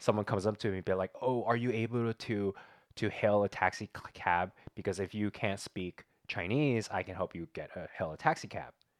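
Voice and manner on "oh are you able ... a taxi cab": plain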